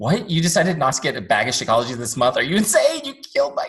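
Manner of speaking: loud, high-pitched mock outrage with rising pitch.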